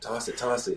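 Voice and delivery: hushed, high-pitched half-whisper. Retelling urging another player to toss it, speaker re-enacts his half-whisper. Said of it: "I'm like whispering".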